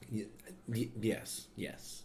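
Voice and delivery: very slow, drawn-out, halting stammer. Tasting a delicious IPA, stuttering. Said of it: "I'm stuttering".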